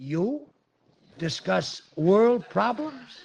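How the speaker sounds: incredulous, amazed, high, drawn-out astonished voice. Reacting to the wife asking to discuss world problems: surprised. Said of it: "you don't have to sound so surprised".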